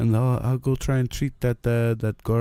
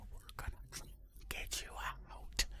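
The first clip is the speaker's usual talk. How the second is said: very soft, hushed whisper under the breath. Whispering to a prisoner while glancing around: whispering.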